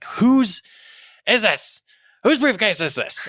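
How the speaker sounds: put-on shrill, very high screaming. Retelling finding an abandoned briefcase before the Supreme Court: imitating own screaming.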